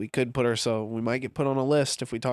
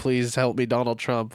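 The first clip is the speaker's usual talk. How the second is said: begging, prayerful pleading tone. Imitating a man pulled over by police, imitating someone praying. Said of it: "praying to Donald Trump".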